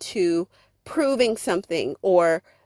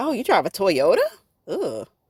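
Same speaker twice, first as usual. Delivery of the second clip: mock-snarky, scornful, disdainful tone. Speaker reenacts her reaction to a guy who drives a toyota, retelling a disdainful tone. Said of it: "It's a tone of disdain".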